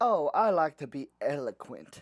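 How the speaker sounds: slow, smug, self-satisfied, savoring delivery. Imitating how Katt Williams talks in interviews: smug Katt Williams impression. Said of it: "Like smug".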